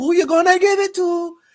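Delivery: put-on Jamaican accent, very high. Retelling what a woman asked him, in a Jamaican voice. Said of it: "in her like a Jamaican voice".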